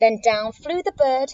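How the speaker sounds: ordinary delivery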